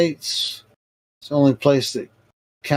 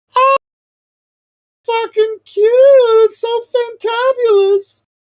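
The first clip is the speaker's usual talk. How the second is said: very high, loud, slow, drawn-out falsetto; 8 dB louder than usual. Showing off vocal range, switching into falsetto. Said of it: "That was me using falsetto".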